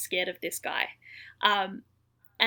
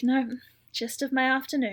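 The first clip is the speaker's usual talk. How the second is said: mock world-weary, fed-up, exasperated tone; 4 semitones higher, 4 dB louder than usual. Retelling a regular 911 caller's reply to the dispatcher, imitating a fed-up, done tone. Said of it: "she just sounds so done with the world".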